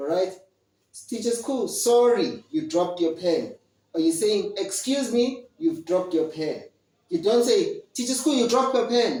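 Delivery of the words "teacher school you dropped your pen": rude, quarrelsome, angry tone, rushed and high-pitched. Showing the wrong way to tell a teacher they dropped their pen: angry, as if fighting. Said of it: "as if we, we are fighting, we are angry".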